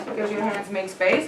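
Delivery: ordinary delivery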